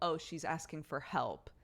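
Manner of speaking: ordinary talk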